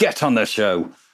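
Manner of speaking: scolding parent voice, calling out. Showing how they read the link in the episode notes, like scolding a kid in a supermarket. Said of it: "like a kid's messing about in a supermarket".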